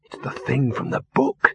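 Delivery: hissing. Spotting the giant half buried in sand, he points it out, hissed. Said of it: "he hissed".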